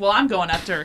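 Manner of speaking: ordinary talk, nothing marked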